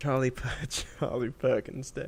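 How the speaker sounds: talking through laughter. Repeating a suggested holiday name back to another speaker, laughing while talking. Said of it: "Why are you laughing?".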